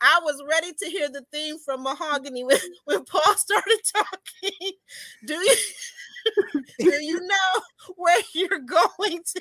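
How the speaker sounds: words breaking up with laughs throughout. Reading a viewer's comment aloud, trying to get through it: laughing while reading aloud. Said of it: "I'm gonna get through this".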